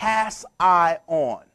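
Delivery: word slowed, stretched into separate parts, low pitch. Speaking to an audience, breaking a word into parts: word slowed way down. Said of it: "Slow down the word".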